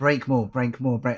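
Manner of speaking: ordinary delivery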